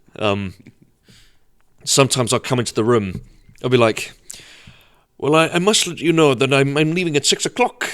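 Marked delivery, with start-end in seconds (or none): 5.2-7.9 put-on old man voice. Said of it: "my impersonation of, uh, my grandfather".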